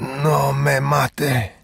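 put-on wheezy, wheezing voice. In a story being read, a wounded man slumped against a tub speaks, wheezing. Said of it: "he wheezed".

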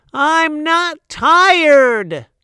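shrill, very loud, high full-volume yell. Reading a story aloud, the narrator gives Lucy's line from her room, yelled. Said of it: "She yelled".

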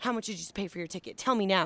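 put-on loud, questioning-toned voice. Retelling a customs officer questioning a passenger: imitating a customs officer talking loudly. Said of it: "the guy was talking really loud".

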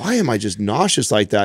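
plain

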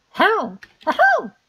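clumsy birdcall, very high and shrill. Attempting a bird sound during the game: bad bird call. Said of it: "I suck at bird sounds".

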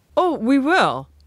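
happy, pleased tone. He answers the narrator's amazed question with a happy reply. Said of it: "he replied happily".

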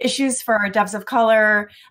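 ordinary talk, nothing marked

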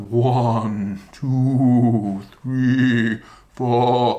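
eerie, drawn-out spooky ghost voice. Showing a counting game for children, counting in a spooky ghost voice. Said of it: "Best spooky ghost voice".

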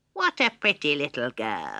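croaky, swooping, sing-song toad voice. Narrating a fairy tale as an ugly toad speaks, croaking toad voice. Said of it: "she croaked".

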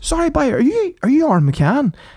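put-on Northern Irish Ballymena accent. Retelling what the man bringing menus said to him, in a thick Ballymena accent. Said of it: "the thickest Ballymena accent I've ever heard".

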